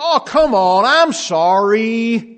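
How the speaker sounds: high, loud, drawn-out, flippant, mock-sincere tone.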